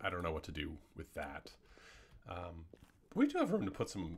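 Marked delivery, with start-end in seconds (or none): 3.1-4.2 very high voice, cracking and breaking upward. Speaker planning how to fill an empty spot in the room, voice cracking. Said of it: "that was a voice crack and a half".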